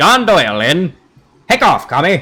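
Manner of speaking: put-on swooping old-time radio announcer voice. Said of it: "a radio guy voice, like Alistair the radio demon".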